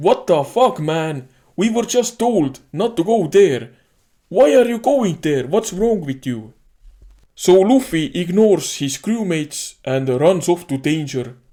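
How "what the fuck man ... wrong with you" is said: play-acted incredulous scolding, yelled in disbelief. Retelling how the crewmates react to going somewhere dangerous: imitating yelling. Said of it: "all the Straw Hats are yelling like".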